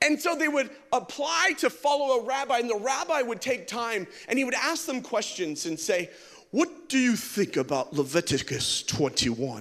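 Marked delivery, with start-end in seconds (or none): 6.5-9.6 very low, smart-sounding, uppity voice. Explaining how followers applied to rabbis, the speaker acts out a rabbi's question: put-on smart, uppity rabbi voice. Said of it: "I just talk like that, but it just seems a little more smart and uppity".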